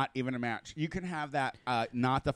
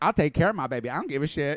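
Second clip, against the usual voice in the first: put-on little girl voice with attitude. Retelling the headliner's comedy bit, imitating a sassy little girl. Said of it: "what the little sassy girl would say".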